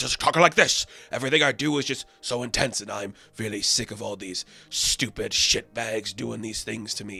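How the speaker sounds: put-on rough, gruff tough-guy voice. Describing an actor's performance, imitating his voice: Tom Hardy gruff-talking voice. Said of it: "the Tom Hardy gruff-talking voice".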